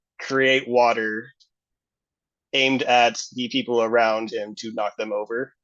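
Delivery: ordinary talk, nothing marked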